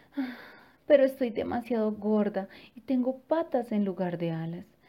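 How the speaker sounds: ordinary delivery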